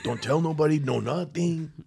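put-on gentle Mexican accent. Retelling what an older cousin tells a younger cousin, in a put-on Mexican accent. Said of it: "I don't know why I did a Mexican accent".

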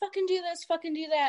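heated, angry, forceful yelling. Describing a man with a gun shouting orders at another man, retelling a yell. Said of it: "he's yelling at him like".

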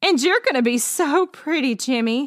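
amused, laughing voice. Melissa joins the friends teasing jimmy, laughing. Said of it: "laughed Melissa".

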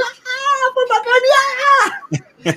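shrieking fangirl scream, very high and drawn out. Recalling the lights going down and the star coming out; imitating own girly fan scream. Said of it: "Es el único concierto que me puse girly".

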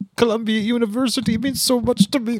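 put-on sad old man voice. Mocking a podcaster who cries every episode, imitating a sad grandpa. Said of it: "he's like a sad grandpa".

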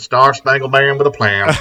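loud, high, belted-out actor voice. Quoting Tommy Lee Jones's line from Cap One in his voice. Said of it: "a whole episode as Tommy Lee Jones".

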